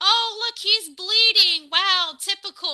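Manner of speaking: slow sarcastic complaining tone. Retelling how dad reacted to a wrestler's sledgehammer: imitating dad's sarcastic annoyance. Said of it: "My dad was very sarcastic".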